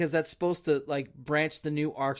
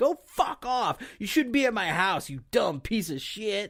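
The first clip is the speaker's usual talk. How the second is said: mock screaming; 5 semitones higher than usual. Retelling how a man screamed at the dude picking him up: imitating someone screaming. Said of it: "why are you screaming at this dude".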